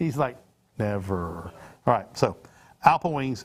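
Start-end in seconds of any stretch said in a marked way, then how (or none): 0.8-1.5 humorless, very low, dead-level flat deadpan. Imitating the producer refusing to join the broadcast: imitating a humorless flat "never". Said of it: "with absolutely no sense of humor in his voice".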